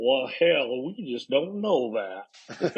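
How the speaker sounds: put-on drawling Southern accent, words stretched. Quoting what a man once said: imitating a southern drawl. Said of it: "he say in his southern drawl".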